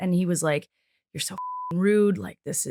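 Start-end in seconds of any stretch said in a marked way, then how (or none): 1.1-2.7 put-on angry ranting, quieter. Retelling a manager's reply on a phone call: imitating someone berating. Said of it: "he just berated me".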